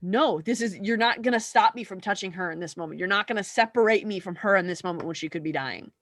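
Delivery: plain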